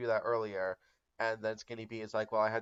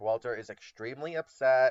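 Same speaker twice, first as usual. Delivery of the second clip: usual speaking voice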